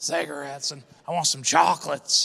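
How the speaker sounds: rough rasp of a heavy smoker. Saying the word 'cigarettes' in a raspy smoker voice. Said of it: "You got to say it with a smoker voice".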